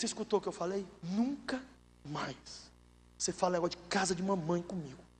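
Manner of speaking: low voice, dropped right down. Retelling a warning he gave his wife during a heated argument: retelling own words in a lowered voice. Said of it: "eu abaixei o tom de voz".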